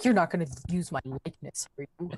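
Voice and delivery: low, mad, annoyed put-on cat voice. Speaking for the cat Samson on camera: put-on mad voice for Samson the cat. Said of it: "he's real mad. He's like".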